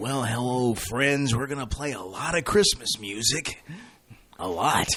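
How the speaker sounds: radio host announcing voice, DJ style. There is still time for a couple more, so do another Ron Moody impression. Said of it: "a couple more Ron Moody impressions".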